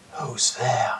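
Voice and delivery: strained, thin, strangled whisper, barely audible. Narrator voicing a hooded man to the players, thin, strangled whisper. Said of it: "he whispers in a thin, strangled voice".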